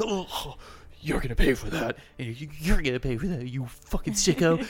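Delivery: loud, angry, threatening snarl.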